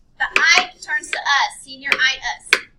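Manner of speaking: stress on ite and us. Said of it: "check it out, check it out".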